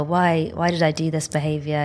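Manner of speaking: normal talking voice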